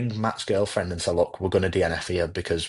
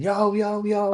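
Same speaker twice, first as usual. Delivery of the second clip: very high, full-volume, top-of-lungs screaming. Retelling screaming in the Lake District, hoping he sees him: retelling a top-of-voice scream. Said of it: "screaming at top of my voice".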